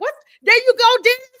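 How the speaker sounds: sudden high, loud excited yelp, voice leaping up. Greeting dennis, glad he's on here, voice jumping way up high. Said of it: "your voice went up like twenty octaves".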